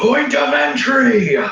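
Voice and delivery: very high, loud barked delivery. Describing his character commanding a surrogate soldier, giving a barked order. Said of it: "he'll bark".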